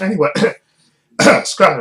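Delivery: loud voice cracking and breaking on the words. Speaker turns to a listener about a film plan, voice cracking. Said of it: "sorry, my voice cracked".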